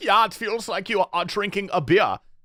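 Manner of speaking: put-on British accent. Retelling what a guy said about strong snus pouches: imitating a british accent. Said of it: "fully has a British accent".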